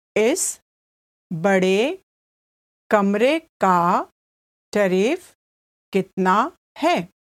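slow, deliberate, halting, phrase-by-phrase broken-up delivery. Repeating a hindi example sentence for learners, said again slowly. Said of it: "I'll say it again slowly".

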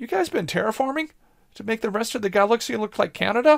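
wary, distrustful tone. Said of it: "looking at them kind of suspiciously going".

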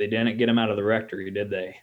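thick, exaggerated, as-strong-as-possible Oklahoma accent. Act out a father answering the door to a priest, in a very strong Oklahoman accent. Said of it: "in the most Oklahoman accent possible".

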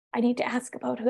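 put-on whisper. Retelling how students bring up sensitive topics: imitating someone whispering. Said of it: "Why are you whispering?".

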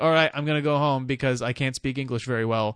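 normal talking voice

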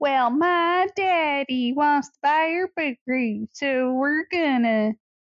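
put-on, poorly done Southern accent. Describing a character who talks like Annie faking a Southern accent: Annie's bad Southern accent. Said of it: "talks like Annie ... trying to do a Southern accent".

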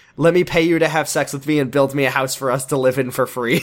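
ordinary talk

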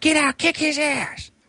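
mock, very high, very slow, shrill drawn-out shouting. Retelling how a girl yelled at a guy after her windshield was smashed, retelling a yell. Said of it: "she's yelling at the guy".

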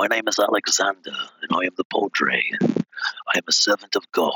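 dark, deep English character voice with low bass. Showing the voice made for a horror game priest: dark English voice with low bass. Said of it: "I came up with this dark English voice".

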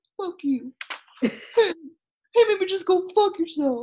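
put-on sheepish tone. Recounting a favorite scene where Pete answers as someone walks away, imitating Pete's sheepish tone. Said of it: "Pete very sheepishly is like".

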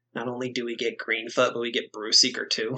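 muttering in a put-on voice. Crankcut, sitting next to the player, speaks up: Crankcut mumbling under breath. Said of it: "mumbles under his breath".

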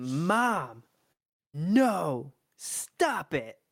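high, stretched-out, drawn-out protesting yell. A mother retelling what Kayla yelled at her: retelling a yell. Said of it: "she yelled".

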